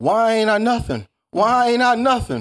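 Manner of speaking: shrill, booming, very high, loud, drawn-out scream. Acting out a person screaming at the whole world: imitating someone screaming. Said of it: "Then I start screaming at the whole entire world".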